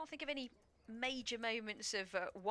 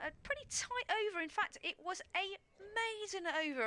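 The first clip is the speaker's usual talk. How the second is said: squeaky, very high pitched-up voice; 10 semitones higher than usual. Commentating to Dave on a maiden over, in a high-pitched voice. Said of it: "I say that with a sort of a high-pitched voice".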